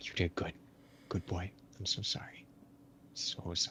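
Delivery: hushed, very soft, breathy whisper, barely audible. Comforting someone during a big bear hug, in character: whispering. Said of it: "just whispering".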